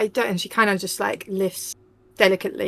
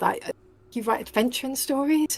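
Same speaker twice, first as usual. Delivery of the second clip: growing more and more excited, much higher; 5 semitones higher than usual. Narrating a scene, voicing a woman questioning a writer, growing more and more excited. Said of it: "she kind of gets more and more excited".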